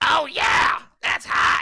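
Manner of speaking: very loud, slow, drawn-out, rough bellowing shout. Showing off a spot-on Gilbert Gottfried impression. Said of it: "I do a spot on Gilbert Gottfried".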